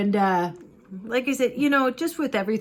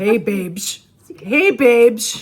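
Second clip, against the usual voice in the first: very loud, put-on dude voice; 2 semitones higher, 9 dB louder than usual. Speaker greeting the other person while playing a character, talking like a guy. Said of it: "I feel like I should talk like this".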